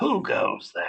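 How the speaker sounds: harsh, rasping, crackly voice. Narrating the scene, the queen calls out to you in a harsh, crackling voice. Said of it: "she calls out to you in a harsh, crackling voice".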